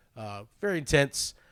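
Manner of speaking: ordinary delivery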